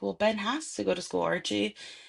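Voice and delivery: ordinary delivery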